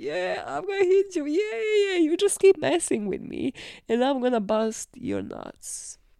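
jokey, playful, teasing tone. Acting out teasing someone who keeps messing with you, jokingly teasing. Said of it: "when you're like jokingly kind of pointing knee".

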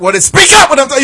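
put-on high-pitched, hollering, scolding voice. Retelling how a mom scolded her son: imitating a mom hollering. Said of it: "she would just holler at him".

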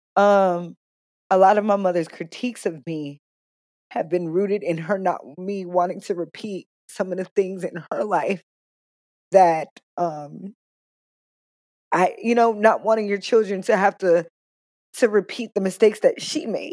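emotional, choked-up voice, welling up mid-sentence. Speaking about her mother's critiques of her, getting emotional. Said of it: "oh my god i'm getting emotional".

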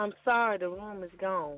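put-on sad, weak voice. Retelling what the little clerk told them at the counter, mimicking a sad, feeble voice. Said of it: "in the saddest, feeblest, weakest voice".

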